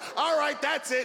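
high, shouted mock drill-sergeant voice.

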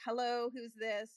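loud, curt delivery with attitude. Retelling answering a call from an unlisted number: answering with attitude, retelling. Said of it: "picked it up with a little bit of an attitude".

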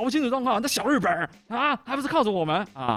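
mock, piercing, very high-pitched, shrill yell. Retelling what someone yelled at a man who cut the line, retelling a shout. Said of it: "然后上完厕所就对他大喊".

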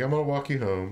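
ordinary talk, nothing marked

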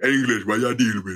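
imitated deep-voiced boy. Retelling being called out in the caribbean by a boy: imitating a deep-voiced boy. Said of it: "a ten-year-old with a deeper voice than you".

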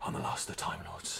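very quiet, breathy, barely whispered voice. Mocking the Doctor's mopey line in a breathy David Tennant voice. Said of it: "can you do your breathy voice for this?".

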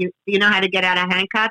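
ordinary talk, nothing marked

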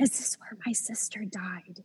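quiet, hushed whispered words. A parent retells what her oldest son said to her, retelling a whisper. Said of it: "he said it in a whisper".

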